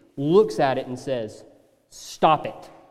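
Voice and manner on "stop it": put-on scolding voice. Retelling a short command, like a parent scolding children: imitating a parent scolding. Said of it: "like a parent scolding two children".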